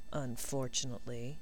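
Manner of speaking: mumbled under breath. Narrator reading Draco's one-word reply to Neville, muttered. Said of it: "muttered Draco".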